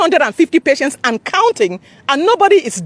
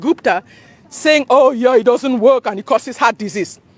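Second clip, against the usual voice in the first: ordinary talk, nothing marked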